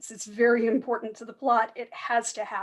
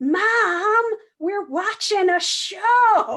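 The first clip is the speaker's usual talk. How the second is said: shrill, very high top-of-the-lungs yell, "mom" stretched; 9 semitones higher, 7 dB louder than usual. Telling how a kid in a kayak answered his mother across the lake, retelling his shout. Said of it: "shouted at the top of his lungs".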